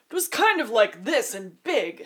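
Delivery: loud, slow, big booming voice. Asked for a demo, showing the voice used before: God voice. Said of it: "That was the God voice".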